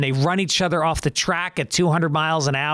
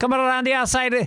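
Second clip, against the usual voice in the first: put-on high, funny Scottish accent; 7 semitones higher than usual. Retelling a childhood memory of car race commentary: imitating Jackie Stewart's Scottish accent. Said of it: "had such a funny accent".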